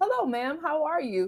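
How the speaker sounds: proper, courteous nice-guy voice. Acting out the guy you bring home: imitating a very polite guy. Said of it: "And so nice".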